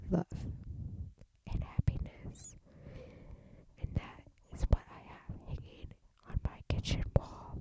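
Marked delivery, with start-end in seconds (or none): 1.5-7.6 whispered quietly under the breath. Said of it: "Why am I whispering?".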